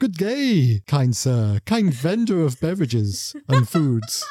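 put-on slow, archaic, overly formal, old-fashioned courtly speech. Joking about ordering a drink at a rest stop: mock old-fashioned formal speech. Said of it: "it wasn't as if I came and, and said".

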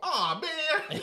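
put-on very high, very loud small-child wail. Imitating how they sounded as a three-year-old waking up: imitating own three-year-old self. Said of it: "three-year-old [name] just go".

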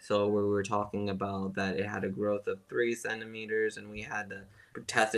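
acted, very quiet, low, flat, dead-dull drone. Recalling the other guys' engineering class recordings, imitating a dead, dull voice. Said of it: "all the other guys' like recordings were dead and dull".

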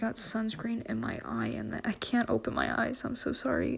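pained voice. Apologizing to listeners after getting sunscreen in the eye, in pain. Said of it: "Oh god, it hurts. The pain".

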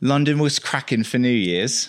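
put-on British accent. Given a line to say, trying it out in an accent: british accent. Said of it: "Let's hear your British".

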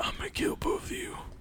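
hushed, breathy, private inner-voice whisper. Acting out Jason in an imagined movie scene: whispering to himself. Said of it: "He just whispers to himself".

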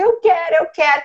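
put-on voice of a small child yelling high. Retelling a child demanding chocolate at the store: imitating a child yelling. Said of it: "e ele gritando".

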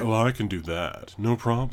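smarmy, offhand tone laid on thick. Introducing a companion named Asterion and showing how he talks, Asterion's put-on smarmy voice. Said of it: "he talks like this ... he's very smarmy".

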